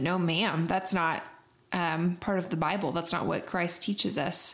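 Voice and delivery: ordinary talk, nothing marked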